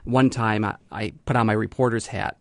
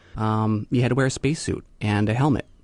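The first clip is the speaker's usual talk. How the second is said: ordinary talk, nothing marked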